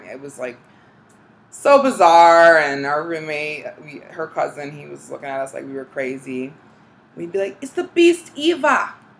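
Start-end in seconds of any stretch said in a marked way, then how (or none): 7.6-8.9 shrill, very high, put-on New Zealand accent. Retelling the first summer in California, talking to the roommate in a put-on New Zealand accent. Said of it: "we started talking in New Zealand accents".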